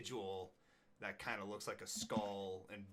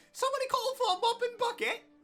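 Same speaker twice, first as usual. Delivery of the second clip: very high, very loud, shrill tiny goblin squeak; 15 dB louder than usual. Voicing a tiny goblin waltzing out with a mop and bucket: tiny goblin voice. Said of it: "this tiny little goblin just, you know, waltzing out with a bucket and a mop going".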